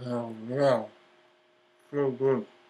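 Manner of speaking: speaking with mouth stuffed with food. Eating live for people in the chat room, talking with mouth full. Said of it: "I'm stuffing it in my mouth".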